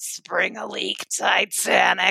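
slow, smoky, raspy drawl. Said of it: "That's what that voice totally reminds me of".

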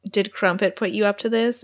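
plain

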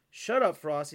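usual speaking voice

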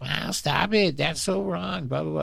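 very high, shrill, raspy, badly done angry scolding. Retelling how Debbie gets mad while watching stuff: terrible impersonation of Debbie getting mad. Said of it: "for that terrible impersonation".

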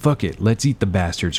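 plain

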